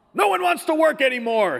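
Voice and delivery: loud, shrill shout, pitched way up. Retelling a man who shouted at the speaker from his window, retelling his shout. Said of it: "he shouted out of his window at me".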